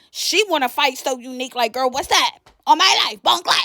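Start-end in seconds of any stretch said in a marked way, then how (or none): 1.8-3.7 mock drunk, angry woman's ranting voice. Retelling how a drunk, territorial woman went off: imitating Kayla going off drunk. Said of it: "she drunk, she territorial, she going off".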